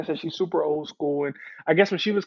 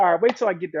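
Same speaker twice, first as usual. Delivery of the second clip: usual speaking voice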